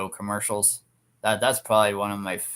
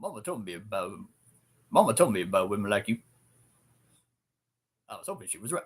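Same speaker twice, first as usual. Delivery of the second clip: very deep put-on voice, dropped just short of lowest. Performing a remembered line after deepening the voice: very deep voice. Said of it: "I need to get my voice deep".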